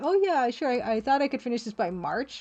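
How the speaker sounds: ordinary talk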